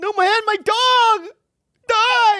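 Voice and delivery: put-on crying voice. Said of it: "and he's t-, crying".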